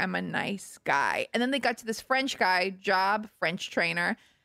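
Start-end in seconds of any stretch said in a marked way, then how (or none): 0.0-1.3 teary, tearful, very slow, very drawn out. Retelling a show where an eliminated contestant had tears in his eyes: imitating a tearful man. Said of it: "One guy had tears in his eyes".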